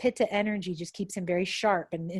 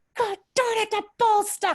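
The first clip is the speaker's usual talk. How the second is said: very high, intense, shrill furious yelp; 5 dB louder than usual. Imagining a voice for the speaker's barking dog, imitating a shrill angry voice. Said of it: "this very intense, like shrill, angry".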